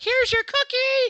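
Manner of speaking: very high, very loud, shrill, gushing, excited voice. Showing the wrong way to give a dog a cookie: imitating excited praise. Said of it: "I don't make 'em look at me like".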